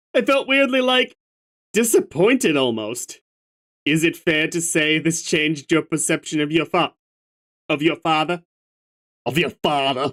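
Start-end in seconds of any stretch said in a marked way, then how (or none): 7.7-8.5 put-on Austrian accent. Asking the listener a question, slipping into an Arnold Schwarzenegger accent. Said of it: "I turned into Arnold Schwarzenegger there".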